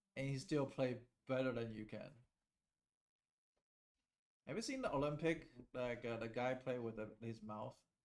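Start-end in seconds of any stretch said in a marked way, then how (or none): none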